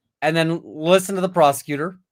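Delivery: ordinary talk, nothing marked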